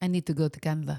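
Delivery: put-on Russian-accented voice. Asked to do the russian accent, voicing her line in it. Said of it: "You're the Russian accent. You do it".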